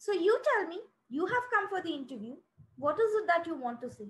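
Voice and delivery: furious, demanding, challenging tone. Retelling what a job interviewer said to them: imitating a furious interviewer. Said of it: "his body language changed and he was so furious".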